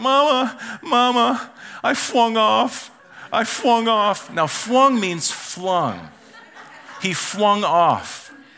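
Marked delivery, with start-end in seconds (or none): 0.0-2.9 put-on crying, pitched much higher. Retelling how her son came up the stairs to his mom, imitating Oakley crying. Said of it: "he's crying like this".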